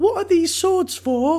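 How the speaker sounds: put-on very high small-child voice. Picturing a small child at the back of the room asking a question: imitating a little kid. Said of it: "a little kid at the back of the room going".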